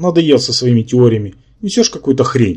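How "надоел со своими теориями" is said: usual speaking voice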